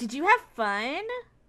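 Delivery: kindly, friendly, easy tone. A game player, as their character, speaks to a happy companion, smiling. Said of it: "Can I smile at him and be like".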